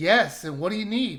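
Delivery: plain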